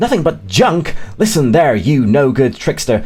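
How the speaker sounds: mock angry, indignant tone. Retelling a cartoon scene where a character is offended: imitating an indignant telling-off. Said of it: "as she's trying to tell him off".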